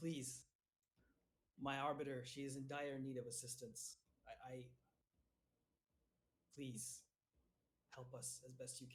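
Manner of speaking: whispered deity voice. Game master voices the god Helm speaking to a player: Helm's whispering voice. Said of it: "Helm's voice once again whispers to you".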